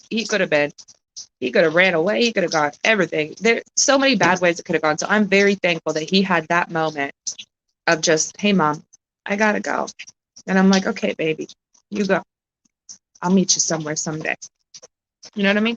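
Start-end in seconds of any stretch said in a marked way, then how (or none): 10.8-14.3 voice catching, choked-up, on the verge of crying. Recalling telling her son to go, about to cry. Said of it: "I'm about to cry like a motherfucker".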